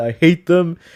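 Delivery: put-on loud, Canadian accent slipping out. Retelling a villain's line, Marcos Inaros with Canadian accent. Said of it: "his Canadian accent came out when he said".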